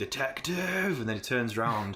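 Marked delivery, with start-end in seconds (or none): 0.0-1.0 mock, very high, top-of-lungs scream. Describing a scene, acting out a character screaming at the top of his lungs. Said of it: "he just screams at the top of his lungs".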